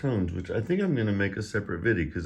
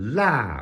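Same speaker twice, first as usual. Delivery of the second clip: la with sharp falling fourth tone, high to low; 4 semitones higher, 5 dB louder than usual. Teaching Mandarin tones with the word for spicy: sharp falling fourth tone on la. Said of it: "the fourth tone, which is a harsh, sharp, sharp falling tone".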